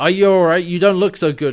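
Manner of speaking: loud, booming, carrying, high-pitched concerned voice. Retelling a scene and quoting a character's line: saying it very loudly. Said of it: "John says very loudly".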